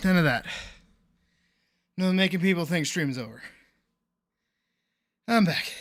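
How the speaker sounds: winded, breathless, panting, catching breath between words. Returning to your stream after lifting stuff into someone's car, out of breath. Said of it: "Out of breath".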